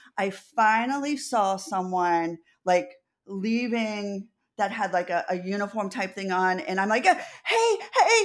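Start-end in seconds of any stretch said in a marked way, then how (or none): 7.1-8.3 acted-out frantic calling, very high-pitched. Speaker retells chasing down a woman in a uniform: retelling a frantic call. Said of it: "frantically running her down".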